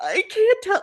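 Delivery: very high pitch, voice close to tears. Retelling an episode where Jim tells Alex about a bad dream: imitating Jim about to cry. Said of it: "Like he's like about to cry".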